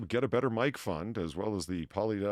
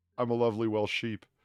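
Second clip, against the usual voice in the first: plain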